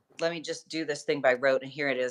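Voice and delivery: ordinary talk, nothing marked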